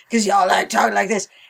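put-on, gravel-voiced tough-guy voice. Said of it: "doing this gravelly voice thing".

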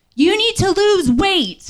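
high, slow, angry shouting.

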